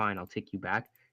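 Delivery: ordinary delivery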